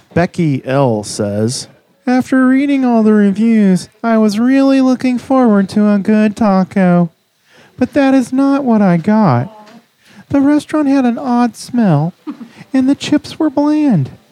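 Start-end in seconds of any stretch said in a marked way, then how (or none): 2.0-14.0 high-pitched, squeaky funny voice. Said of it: "read bad reviews of Taco Zone in a funny voice".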